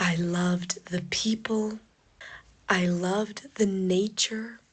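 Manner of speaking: very slow, unhurried pace. Woman talking in a short video, speaking very slowly. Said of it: "this girl speaks very slowly".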